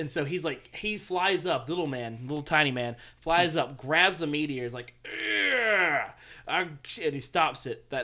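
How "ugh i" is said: mock, drawn-out, pitched-up strongman straining grunt. Retelling a scene where the Tsuchikage grabs a meteor: Tsuchikage strong man noise. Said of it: "that was my strong man noise".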